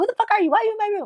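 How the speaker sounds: shrill, very high, freaked-out, panicked scream. Imagining finding a stranger in the bedroom, mock panicked screaming. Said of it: "I'd be freaking out, yelling, screaming".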